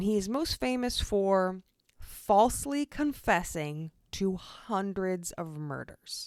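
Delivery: slow, deliberate delivery. Said slowly on purpose so listeners can hear it clearly: slow, deliberate delivery. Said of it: "I said that slow just so you could hear that".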